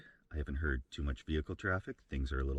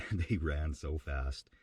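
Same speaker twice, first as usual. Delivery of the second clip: normal talking voice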